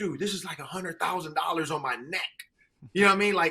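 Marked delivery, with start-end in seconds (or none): 0.0-2.2 awestruck, voice full of awe. Retelling a player's reaction to chains put on him: imitating Kirk Cousins in awe. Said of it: "he's in awe of".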